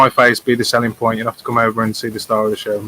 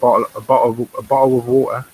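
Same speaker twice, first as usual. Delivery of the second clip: British London accent. Demonstrating how Londoners say a phrase, in a London accent. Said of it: "how the British say bottle of water ... more of a Londoner".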